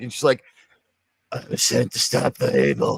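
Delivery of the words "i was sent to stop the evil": very low, deep, husky smoker's voice. Describing a character's first line, doing Alice's husky smoker's voice. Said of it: "she's just got like a smoker's voice".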